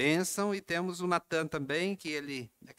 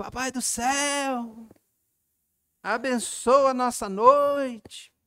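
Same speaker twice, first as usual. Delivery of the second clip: very loud, high bellow at full volume, céu stretched; 9 semitones higher, 8 dB louder than usual. Retelling how the youngest boy prayed at night, imitating a child shouting. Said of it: "E ele gritava assim".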